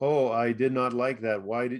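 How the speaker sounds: plain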